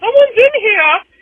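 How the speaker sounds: very high, very loud put-on disguised voice. Speaker in a bathroom stall tells others it's occupied, imitating a coworker's voice. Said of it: "mimic a coworker's voice".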